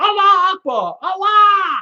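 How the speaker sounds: play-acted high-pitched scream, repeated. Retelling what she was screaming over and over: imitating someone screaming. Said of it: "She's going".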